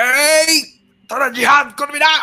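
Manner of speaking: sudden loud shouting, yelling out. Acting out recruiters calling people to jihad, sudden shouting. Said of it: "সবাই একটু headphone গুলা কান থেকে একটু সরায় নেন।".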